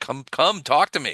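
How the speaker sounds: put-on cheerful voice. Voicing a priest who beckons the party closer: put-on cheerful voice. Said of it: "He was cheerful".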